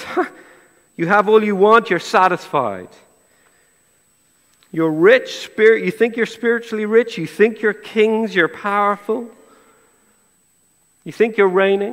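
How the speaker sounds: mock dry sarcasm. Acting out what Paul says to the Corinthians: imitating a sarcastic tone. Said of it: "Paul here in verse eight is being sarcastic".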